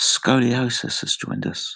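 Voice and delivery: slow, hushed whisper. Welcoming someone new who joined the channel, whispered. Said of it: "I'll whisper this".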